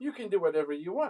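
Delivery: annoyed, dismissive woman's voice. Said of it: "She sound to me right now like".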